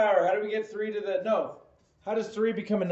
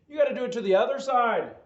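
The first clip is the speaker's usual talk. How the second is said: put-on Irish accent; 3 semitones higher than usual. Explaining a step of solving the equation, in an Irish accent. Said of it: "say it in Irish accent".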